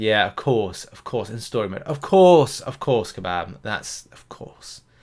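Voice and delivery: sarcasm laid on as thick as possible. Reacting to relics not being usable in story mode: very sarcastic. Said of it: "I said it in the most sarcastic way possible".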